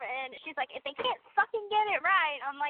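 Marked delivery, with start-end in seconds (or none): 0.7-2.4 angry, exasperated, pissed-off outburst, pitched up. Retelling a sibling's angry reaction to a movie: imitating Mia pissed off. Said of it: "so pissed off".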